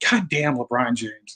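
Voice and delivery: slow, drawn-out, pissed-off angry yell. Retelling watching a playoff game at a party: imitating own past yell. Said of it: "I just yell".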